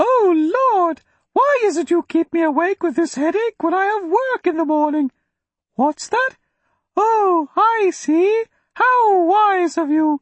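put-on very high, girlish little voice. Narrator reads Jennison imitating a man praying at night: high young girl voice. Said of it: "Jennison raised his voice an octave, as if imitating a young girl".

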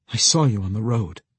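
ordinary delivery

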